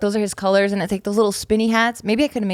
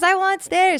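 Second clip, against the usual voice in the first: put-on excited kid voice, higher; 10 semitones higher than usual. Retelling a kid's reaction to a new house with stairs: imitating Taika, excited. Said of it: "So he's pretty excited".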